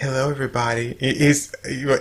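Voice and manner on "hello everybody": camp, effeminate cartoon-like put-on voice. Retelling a cartoon scene, imitating an effeminate cartoon character. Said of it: "the one kind of effeminate guy".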